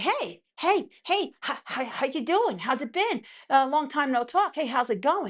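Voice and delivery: eager, nosy, overkeen, curious tone. Imitating someone who wants back in after ignoring you: imitating someone curious. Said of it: "come all in like curious cat".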